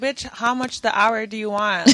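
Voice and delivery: ordinary talk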